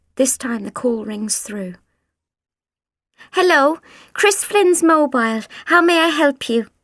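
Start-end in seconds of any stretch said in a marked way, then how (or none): 3.4-6.7 cheerful, bright, chirpy high-pitched voice. Reading a story, the narrator voices a phone call being answered: chirpy voice. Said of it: "A chirpy voice says".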